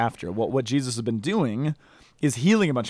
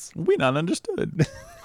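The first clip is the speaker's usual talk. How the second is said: silly, goofy cartoonish creature voice, pitched up; 5 semitones higher than usual. While another speaker explains a Gospel story, voicing the crowd in a Jar Jar Binks voice. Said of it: "you sound like Jar Jar".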